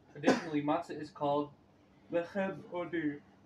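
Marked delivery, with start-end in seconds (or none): 2.1-3.2 words drawn out through a yawn. Explaining a text about matzah to a group, speaking through a yawn. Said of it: "I was yawning".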